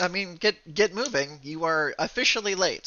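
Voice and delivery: stern teacher voice. A character addresses two newly enrolled students, in a stern tone. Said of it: "he says in a stern tone".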